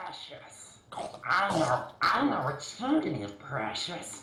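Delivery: creature voice, fully in role. Gollum has arrived at the shop; speak to the customer in a Gollum voice. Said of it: "Gollum has arrived".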